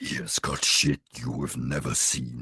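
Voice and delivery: deep, very low, monstrous voice. Imitating Venom from the first movie: lower, monstrous Venom voice. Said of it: "it was a lot lower and a lot more monstrous".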